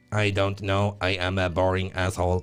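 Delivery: robotic, synthesized voice. Joking about replacing a co-host with a computer: Stephen Hawking computer voice. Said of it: "a computerized voice, like a Stephen Hawking's job".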